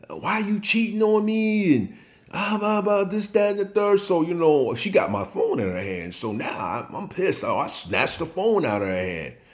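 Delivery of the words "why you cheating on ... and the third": put-on high-pitched, yelled delivery. Telling a story about a woman going through his phone, imitating her yelling. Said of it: "And she yelling at me".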